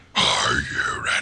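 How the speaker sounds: creepy, whispered, put-on scary voice. Asking the other speaker if they are ready: put-on scary voice.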